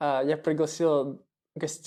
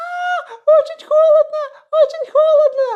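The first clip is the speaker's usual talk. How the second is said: put-on shrill little-girl scream, very high and very loud; 11 dB louder than usual. Retelling a jump into cold river water: imitating screaming like a little girl. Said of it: "я закричал, как маленькая девчонка".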